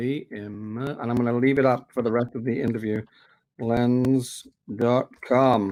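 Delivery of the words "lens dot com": deliberate, very slow, drawn-out word-by-word spelling-out. Repeating a website name for everybody listening, said really slowly. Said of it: "heard me say that really slowly".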